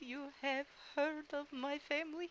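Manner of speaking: teary, very soft voice. A game character answering after a troupe name is recalled, teary. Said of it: "he gets all watery eyed".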